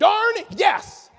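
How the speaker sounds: very loud, high shout of total conviction. Showing a participant how the phrase should be said: with conviction. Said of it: "you got to say it with conviction".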